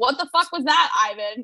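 ordinary talk

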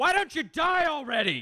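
high-pitched mock yelling.

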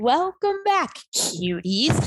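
flight attendant announcement voice. Podcast host welcoming listeners back at the episode start, flight attendant voice. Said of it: "It sounded like a flight attendant there".

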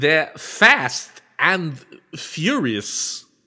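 very slow drawl, each word dragged out. Asked to do a quick Walken, the speaker delivers the line as a Walken impression. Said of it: "Do you want to do a Walken real quick?".

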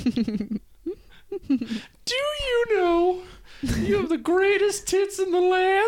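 very high-pitched cartoon cookie character voice. Prompted to answer as the Gingerbread Man hitting on the asker, Gingerbread Man voice. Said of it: "If whoever does that voice dies".

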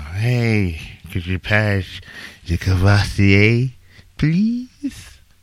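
put-on slow, tipsy drunk voice, drawn-out "hey". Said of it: "I sound like I'm drunk right now".

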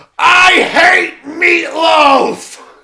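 very high, full-volume, shrill furious scream. Retelling a film scene where the doctor screams over dinner: imitating a furious yell. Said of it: "At the top of his lungs, yells".

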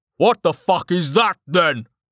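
yelled, high-pitched. A character confronts those accused of attacking the city, shouting at them. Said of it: "Halgrave shouted".

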